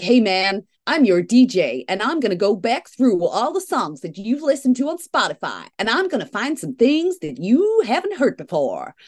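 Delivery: put-on New York accent. Describing a new feature he clicked on in his app, in a Spotify DJ New York accent. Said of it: "got this New York accent".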